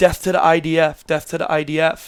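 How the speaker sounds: ordinary delivery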